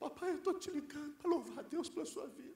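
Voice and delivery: soft, tearful voice, sobbing through words. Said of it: "minha filha me liga soluçando, chorando".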